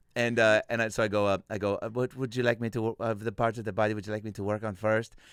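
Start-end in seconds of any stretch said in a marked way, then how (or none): 1.8-5.1 fake Mexican accent from Tijuana. Retelling a comedy bit, playing a masseuse: put-on Tijuana masseuse accent. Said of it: "Is this a Tijuana accent?".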